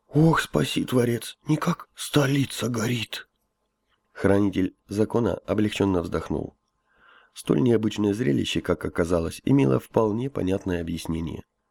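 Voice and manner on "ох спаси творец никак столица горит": slow, anxious groaning. The high priest exclaims behind the Keeper's back: anxious groaning. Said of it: "тревожное оханье верховного жреца".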